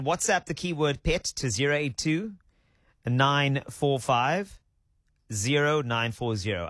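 slow, unhurried, careful, deliberate delivery. Speaking to listeners about entering a contest, said slowly. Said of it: "I said it slow".

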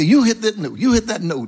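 high, insistent, firm dad voice.

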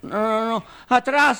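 put-on high, rising, frightened drunk voice. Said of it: "el borracho".

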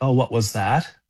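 plain

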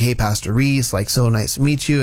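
ordinary delivery

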